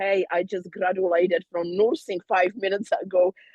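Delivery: plain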